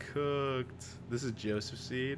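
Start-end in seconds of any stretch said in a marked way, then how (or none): none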